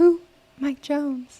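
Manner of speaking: high, owl-like hooting voice. Telling a friendly listener about a funny owl trend, acting out one owl, Houston owl voice. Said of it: "it's an owl, but he's from Houston. And he goes".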